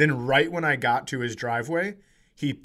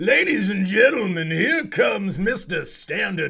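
pitched-up, blustery, puffed-up Southern drawl cartoon voice; 7 semitones higher, 4 dB louder than usual. Having turned someone's guy into Foghorn Leghorn, the speaker announces him in a Foghorn Leghorn voice. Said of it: "I turned your guy into Foghorn Leghorn".

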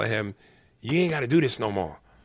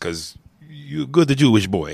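fake, put-on Italian accent; 3 semitones higher, 4 dB louder than usual. Addressing the other speaker jokingly mid-rant: put-on Italian accent. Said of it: "even though I did that in an Italian accent".

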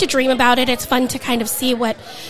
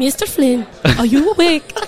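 put-on Swedish accent. Repeating what they say when they come in, in a Swedish accent. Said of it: "with a Swedish accent maybe".

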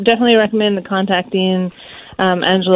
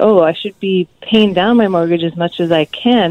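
normal talking voice

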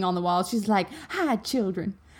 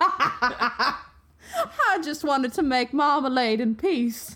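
mock exaggerated southern drawl; 2 semitones higher than usual. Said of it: "making fun of people from the South".

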